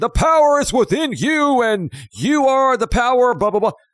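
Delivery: very high, drawn-out, top-of-lungs screaming. Retelling late night commercials, imitating Tony Robbins screaming. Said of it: "he would scream from the top of his lungs".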